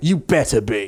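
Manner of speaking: put-on British accent. Retelling a movie scene, the speaker voices the talking cat's reply to Derek, British accent. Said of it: "the cat responds with a British accent".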